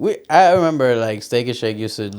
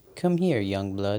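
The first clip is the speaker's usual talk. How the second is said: synthetic, computerized female AI voice; 6 dB quieter than usual. Imagining an ai speaking to them in a computerized lady voice. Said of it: "the computerized, like, lady voice saying".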